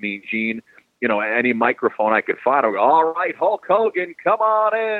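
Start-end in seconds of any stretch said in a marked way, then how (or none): 2.8-5.0 very high, slow wrestling-announcer call. Retelling playing announcer as a kid, imitating Mean Gene Okerlund. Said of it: "I would try to emulate him".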